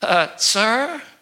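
mock quivering, trembling voice. Acting out a young man calling after the speaker, imitating a quivering voice. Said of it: "this quivering voice".

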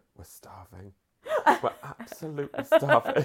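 drawn-out stage half-whisper. Retelling what a friend said on the phone from a hotel lobby: imitating a hushed voice. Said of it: "hushed voice".

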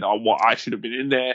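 ordinary delivery

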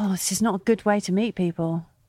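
plain

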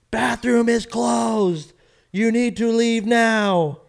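slow, loud shout. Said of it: "they just kept yelling".

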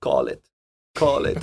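very low, deep, dropped film-style voice. Recalling the gas station scene in No Country for Old Men: No Country for Old Men voice. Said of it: "that amazing voice".

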